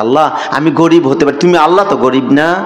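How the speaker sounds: ordinary delivery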